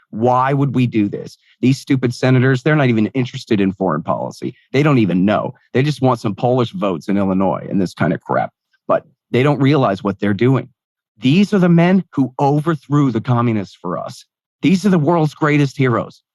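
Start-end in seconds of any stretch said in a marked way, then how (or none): none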